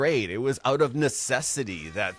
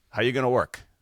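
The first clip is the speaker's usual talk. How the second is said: mock dry, flat, expressionless deadpan delivery. Retelling how dad answered news of soccer tryouts: imitating dad's deadpan delivery. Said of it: "he just deadpan looks at me and goes".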